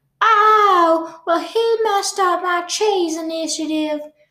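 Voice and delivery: squeaky voice with the "oh" drawn out. Retelling a police scene, speaker gives the mouse's answer in 12 oz. Mouse impression. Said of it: "Is that your best impression of the 12-ounce mouse?".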